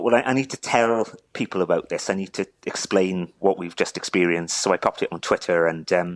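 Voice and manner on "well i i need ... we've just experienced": normal talking voice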